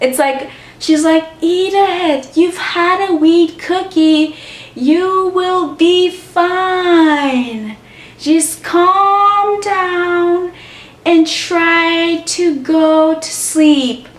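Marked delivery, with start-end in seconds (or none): 1.4-13.9 very slow, dragged-out, pitched-up voice. Retelling what a friend said to the speaker: imitating the friend's very slow voice. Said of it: "her voice is so slow".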